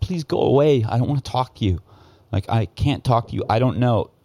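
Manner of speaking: high-pitched, put-on tearful crying voice. Retelling a man pleading with people banging on his door: imitating a man crying. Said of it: "and he's crying".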